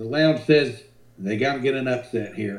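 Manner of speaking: ordinary talk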